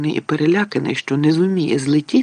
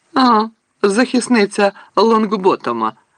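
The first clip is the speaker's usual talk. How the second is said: high, taunting, jeering mocking tone; 5 semitones higher than usual. A slytherin girl jeers at the girl who just stood up for a classmate: mocking. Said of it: "Глузливо мовила Пенсі Паркінсон".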